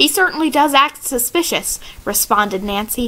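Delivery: ordinary delivery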